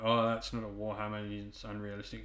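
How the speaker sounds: ordinary talk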